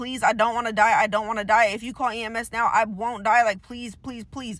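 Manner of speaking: put-on desperate, begging voice. Retelling how a shot woman begged a man to call EMS: retelling a desperate plea. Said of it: "Has to beg this man to save her life".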